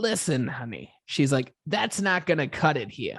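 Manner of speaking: put-on, thick, heavy Long Island accent. Retelling what a woman said to him about pay, in a thick Long Island accent. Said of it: "Thick Long Island accent".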